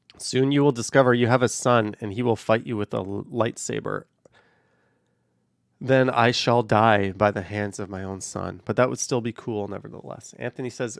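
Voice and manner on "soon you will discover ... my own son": ordinary talk, nothing marked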